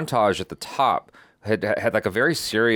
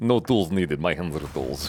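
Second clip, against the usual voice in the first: fake Russian accent, lower pitched; 4 semitones lower than usual. Joking with another speaker about Russian tech in a film: put-on Russian accent. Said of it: "look at your Russian accent".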